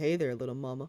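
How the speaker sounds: very sexy, flirty, seductive voice. Imagining how he would talk, the speaker tries a very sexy voice. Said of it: "or it's like a very sexy".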